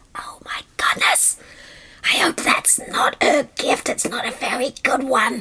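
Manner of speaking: soft, breathy, murmured whisper. Telling a story, voicing the crowd who doubt a gift: whispering. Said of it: "people began to whisper".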